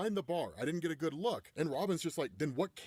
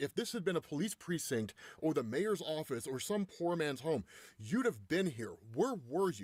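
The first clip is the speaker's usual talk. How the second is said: ordinary delivery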